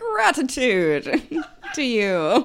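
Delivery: put-on old-fashioned gentleman voice, high and swooping. Imitating how the other speaker sounded, like a man from 1820. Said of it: "Your voice was like that of a man from 1820".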